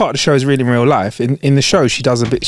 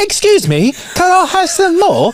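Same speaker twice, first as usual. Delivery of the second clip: put-on very high, swooping, sing-song English accent. Discussing elocution coaching, the speaker does an Oliver impression. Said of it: "how to sound like Oliver".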